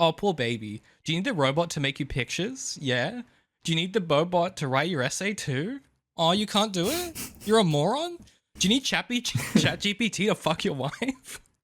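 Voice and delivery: put-on high, patronizing, condescending poor-baby pity. Reading a text aloud to the other speaker, in a condescending 'poor baby' tone. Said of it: "So read it with that tone".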